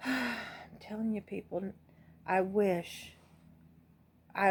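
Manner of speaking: very slow, close-to-crying voice. Addressing people after listing health risks, close to tears. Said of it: "I'm gonna start crying".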